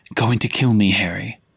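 hushed whisper. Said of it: "he whispered".

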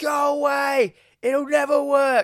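mock shrill, high, slow, drawn-out yell. Retelling a movie scene where a character yells at Belial: imitating someone yelling. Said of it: "he just yells to Shelley".

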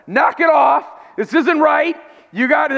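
high yelling. Retelling swimming to the side and yelling at the guy, retelling a yell. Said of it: "I started yelling at him".

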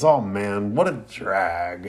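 play-acted, very slow, drawn-out huge groan. Retelling a story scene as Shikamaru, with a big groan. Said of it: "groans real big and goes".

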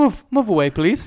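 grand, la-di-da hostess manner. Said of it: "Sounds very fancy".

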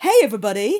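booming, big, belted-out voice. Introducing herself on a recording: Pat Sharp voice. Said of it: "I go into Pat, Pat Sharp".

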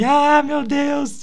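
very high, frightened scream of terror. Recalling watching Mr. M with his father as a child, retelling a scared scream. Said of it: "gritando assim".

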